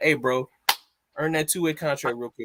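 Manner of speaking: ordinary delivery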